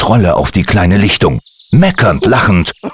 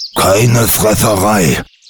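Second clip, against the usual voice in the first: growling, complaining tone. Gumpel heads toward the empty snare: growled. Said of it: "knurrte Gumpel".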